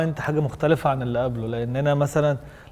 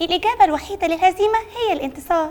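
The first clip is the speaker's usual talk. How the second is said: rousing put-on dubbed-cartoon voice. In a party game, asked to say a rousing line in a dubbed cartoon voice. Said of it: "قول مقولة حماسية بصوت كرتون مدبلج".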